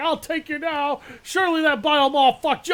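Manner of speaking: jeering, taunting soldier voice. Retelling what the hiding enemy trooper seemed to say: imitating the Imperial Scout Trooper. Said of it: "And then he was like".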